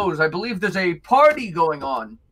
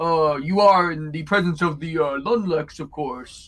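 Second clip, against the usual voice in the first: affected, put-on, lowered, deeper speaking voice; 3 semitones lower than usual. A gnome man speaks to a lady, in a put-on deeper voice. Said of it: "He puts on a sort of deeper voice".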